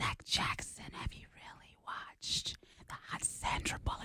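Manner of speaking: very hushed, soft, sweet, intimate whisper. Asked to whisper sweet nothings in someone's ear, the speaker tries it. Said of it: "whisper sweet nothings into my ear".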